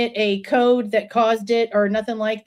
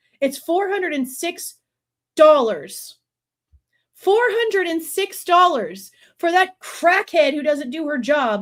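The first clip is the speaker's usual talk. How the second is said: bitter angry sarcasm, higher; 6 semitones higher than usual. Complaining about what the city attorney charges for her work: angry and sarcastic. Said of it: "me being sarcastic 'cause I'm angry".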